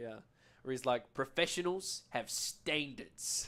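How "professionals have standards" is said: Australian accent, even delivery. Showing the lead-in line used to start an Australian accent, Sniper impression. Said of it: "if I'm doing an Australian accent".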